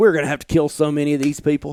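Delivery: normal talking voice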